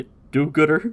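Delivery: muttering. Retelling a scene, quoting Roshi muttering at Turtle: muttering under breath, imitating Roshi. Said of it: "And under his breath".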